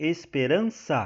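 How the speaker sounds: esperança said very slowly with ran stressed. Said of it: "é a penúltima".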